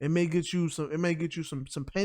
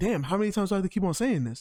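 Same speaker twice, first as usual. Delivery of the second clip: put-on frustrated teacher voice; 3 semitones higher than usual. Retelling a classroom exchange, the speaker quotes the teacher: imitating a frustrated teacher. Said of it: "I'm getting frustrated with this conversation".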